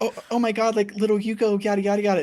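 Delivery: put-on high-pitched baby voice. Recapping a show, the speaker voices a character badmouthing Yuko in Rie's baby talk. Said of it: "You speak baby talk".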